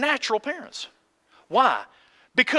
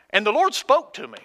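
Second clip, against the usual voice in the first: ordinary talk, nothing marked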